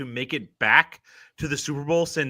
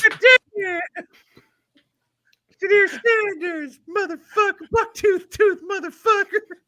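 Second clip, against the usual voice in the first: put-on wrestling manager rant voice, higher and louder; 7 dB louder than usual. Asked by another speaker to do the Jim Cornette voice: Jim Cornette voice. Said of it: "Can you do the Jim Cornette voice for us?".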